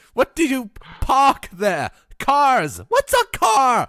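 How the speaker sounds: put-on shouting. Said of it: "Why are we yelling?".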